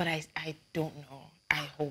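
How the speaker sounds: very quiet, weary, disillusioned, jaded tone. Doubting that things will get better, sounding jaded. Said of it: "can you hear how jaded she is".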